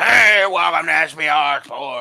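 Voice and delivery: rough gravelly voice, very slow, drawn way out. Recalling a guy's video intro, imitating his gravelly voice. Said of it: "he had this like really like gravelly voice".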